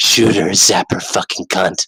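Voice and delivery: creepy, very low stage whisper. Retelling a man with a drone urging someone to shoot, imitating a creepy whisper. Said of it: "in this creepy little whispery voice".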